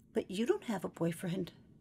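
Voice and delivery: very hushed, plaintive, little pleading half-whisper. John half-whispers to Brenda over the noise of the ballpark: plaintive half-whisper. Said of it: "John whispered, in a voice so plaintive".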